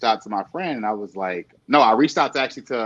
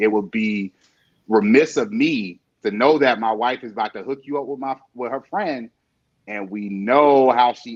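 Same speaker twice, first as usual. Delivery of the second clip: normal talking voice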